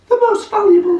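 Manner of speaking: very high female voice. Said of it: "I was on Holmes then".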